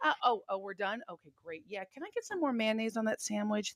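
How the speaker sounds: very soft, mock prim voice. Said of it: "this is Jasmine Crockett, right?".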